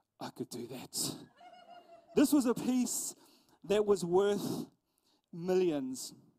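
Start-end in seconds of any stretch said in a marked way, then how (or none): 0.2-1.1 muttered, barely voiced whisper under the breath. Retelling what people at the museum said of the canvas: imitating people whispering. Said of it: "whisper under their breath".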